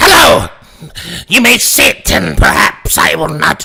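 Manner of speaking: startling, swooping, put-on demonic fiend voice. Voicing a demonic fiend that greets the others, in a demonic fiend voice. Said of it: "that that voice got me off guard".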